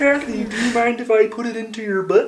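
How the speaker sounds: very loud, high, felt frog-puppet voice. Retelling how someone pretended all night to be Kermit; Kermit the Frog voice. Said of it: "Logan was pretending to be Kermit the Frog".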